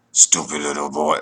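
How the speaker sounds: really deep, low demon voice. Recounting what a demon said through them, in a really deep demon voice. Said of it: "demons speak with a really deep voice, like, you know, it was like, ... like that".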